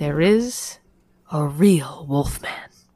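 read dramatically. Reading an all-caps line aloud for a co-reader, dramatically. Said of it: "I did it dramatically".

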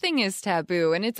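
ordinary delivery, nothing marked

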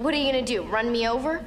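acted-out, very high, sassy comeback. Retelling their favorite line from a scene, the speaker gives a mock-sassy retort. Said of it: "She's all sassy like saying".

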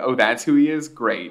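normal talking voice

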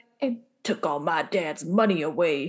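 low, deep, gruff grown-man voice. Imagining adult Sawyer in an intense emotional moment, Sawyer gruff voice. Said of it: "with his gruff voice being like".

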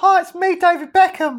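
pitched way up, loudly belted. Asked again for a celebrity impression: David Beckham impression. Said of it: "Do your impression of David Beckham again".

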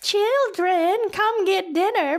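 put-on very high, drawn-out, old-fashioned fifties-style voice. Retelling a mother calling her children in for a meal: 1950s parent voice. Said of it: "that's what fucking parents sounded like in the fifties".

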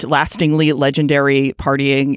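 plain

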